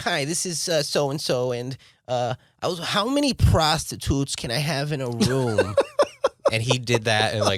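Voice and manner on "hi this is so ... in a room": Yiddish-inflected speech.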